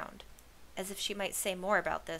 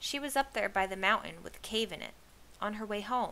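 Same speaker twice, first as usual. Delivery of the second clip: ordinary delivery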